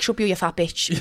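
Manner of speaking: put-on angry man voice. Mocking a man with anger issues who gets confronted: imitating an angry man. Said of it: "Fellas with anger issues. I hate a fella who gets confronted and he's like".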